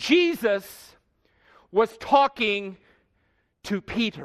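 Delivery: slow, paused build to stressed "to Peter". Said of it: "I emphasized the word".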